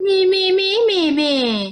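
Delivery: put-on, pitched way up, dragged-out, slow mocking taunt. Describing a reaction that feels very old, the speaker acts it out: mocking imitation of someone. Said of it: "Like very mocking the person".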